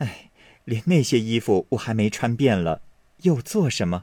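plain reading voice

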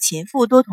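ordinary delivery

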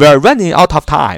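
fast, linked-together speech, words all connected. Showing english linking when speaking fast: fast, words linked together. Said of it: "你肯定也会非常快的说，所以这时候你还是要连读，你要这样说".

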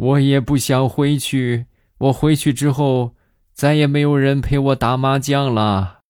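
mock high, sobbing speech through tears. Retelling a departing colleague's farewell words, mock crying while talking. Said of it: "一边哭一边说".

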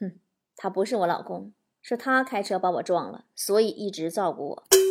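low, soft, cold sneer.

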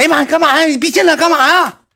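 woman shrieking at very high pitch. Recounting walking into the room, imitating a woman shrieking. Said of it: "嗷一下喊一声".

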